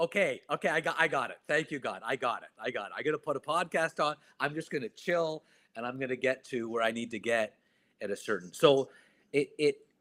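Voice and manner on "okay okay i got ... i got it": acted, words breaking up with laughter. Retelling getting cut off while driving, retelling talking while laughing. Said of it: "I started laughing, going".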